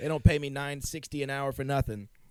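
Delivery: put-on half-done Boston accent. Acting out a guy from a story, in a semi Boston accent. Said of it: "semi Boston accents".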